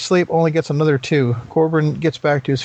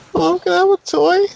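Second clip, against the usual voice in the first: put-on very high, shy, timid little child voice. Mocking how someone sounds when asking for something, timid little kid voice. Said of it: "He sounds like a little kid mustering the courage".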